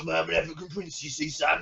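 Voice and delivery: put-on East End London accent. Pitching a film scene with Bob Hoskins as an African prince, Bob Hoskins East End accent. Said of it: "Oh, this accent".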